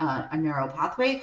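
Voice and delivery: normal talking voice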